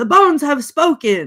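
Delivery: sudden, loud, high-pitched yell. Retelling a movie character announcing the verdict: retelling a yell. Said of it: "he yells out loud".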